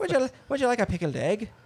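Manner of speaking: Scottish-Irish sounding accent. Joking about a European-style region on Romulus, in a Scottish or Irish accent. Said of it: "Or Scottish, somewhere in there".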